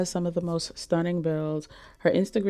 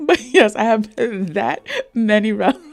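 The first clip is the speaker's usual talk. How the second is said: very loud, high-pitched talking through giggles; 5 semitones higher, 9 dB louder than usual. Talking about collected relics, speaker is giggling while talking. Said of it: "Sorry, I'm giggling to myself".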